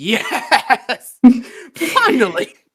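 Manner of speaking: laughing, slowed-down joyful scream.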